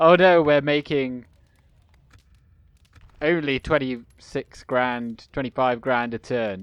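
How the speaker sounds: usual speaking voice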